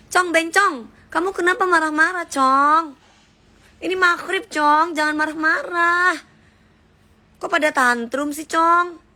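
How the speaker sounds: high-pitched, camp, teasing scolding tone.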